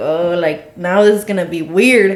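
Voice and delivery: ordinary talk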